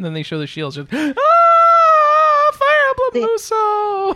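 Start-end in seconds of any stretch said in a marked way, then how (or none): 1.2-4.2 very high, very slow, thrilled, drawn-out scream. Retelling how Anna reacted when the shields appeared: imitating Anna's excited scream. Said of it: "She's so excited".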